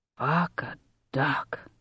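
low, hushed, stunned amazement. Reading the cop looking down at the arm: low, amazed voice. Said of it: "the cop said in a low, amazed voice".

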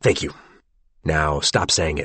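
ordinary delivery

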